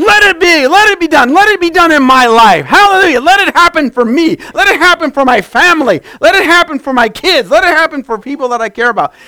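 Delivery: high, loud, joyful yell. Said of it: "You just gotta yell".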